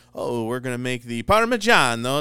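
put-on very loud, belted Italian accent. Imitating the Italian chef on Food Network: Giada imitation. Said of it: "she's like".

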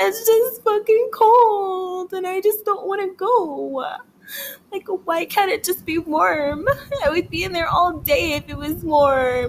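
high, fake, tearful sobbing voice. Complaining to listeners about not wanting to go somewhere cold, fake crying voice. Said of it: "that was my real cry voice".

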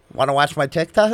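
normal talking voice

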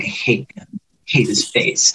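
quiet, sideways mutter under the breath. Retelling what a player said during a challenge: imitating muttering under breath. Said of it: "under her breath, she's like".

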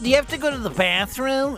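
very high-pitched voice. Podcast host quoting what women in his life ask, imitating his wife. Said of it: "my wife's going to be so mad at my impression of her there".

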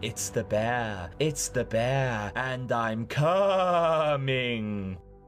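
ethereal, otherworldly voice. Recapping a video, voicing an off-screen announcer in an ethereal voice. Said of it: "an ethereal voice announcing".

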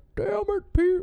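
very high, very loud cartoon-dad voice. Struggling to describe a cartoon voice, doing the Peter from Family Guy voice. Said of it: "the voice he does for Peter".

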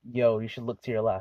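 mock serious tone. Retelling a guy in the back seat suddenly warning him: serious grave-danger tone. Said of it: "In a serious fucking".

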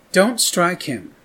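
contemptuous, scornful tone. Narrating Eleanor's words to the governor, scornful. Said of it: "said Eleanor scornfully".

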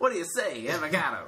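put-on old-timey twenties-era period voice. Speaker practising a 20s impression with others, in a 1920s voice. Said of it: "I don't think we have a good 20s impression".

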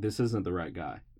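ordinary delivery

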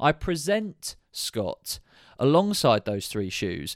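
deliberately slowed, slow and careful delivery.

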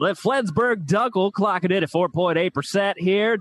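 put-on radio announcer voice. Prompted with 'radio voice, go', radio announcer voice. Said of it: "Radio voice, go".

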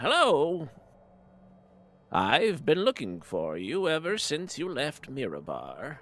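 animated, high, swooping sing-song storybook voice. Narrating a scene, voicing a woman introducing herself to a stranger, Merrily Fiddlebender voice. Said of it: "she introduces herself. She goes".

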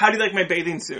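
ordinary talk, nothing marked

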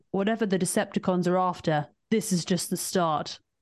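best-effort put-on British accent. Quoting the british guy's line from the film, in his best british accent. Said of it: "my best British accent".

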